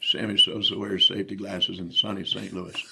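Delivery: speech delivered as a whistle. Retelling how a pitching coach talked: talking with a whistle. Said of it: "was able to talk with a whistle".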